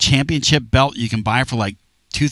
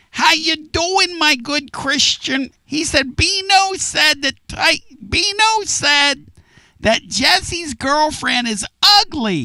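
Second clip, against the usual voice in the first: squeaky, very high-pitched put-on voice. Retelling what a caller said on the phone: imitating Bill's voice. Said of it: "let me get my Bill voice here".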